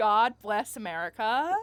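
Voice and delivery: very loud, shouted put-on American accent. Improvising a character from America, in a Piper Drake American accent. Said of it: "I can't do American".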